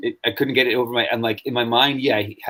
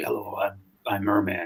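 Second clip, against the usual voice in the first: slow, deliberate put-on superhero voice; 3 semitones lower, 7 dB quieter than usual. Retelling how a character sounded in a show, Batman voice. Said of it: "same voice as Batman".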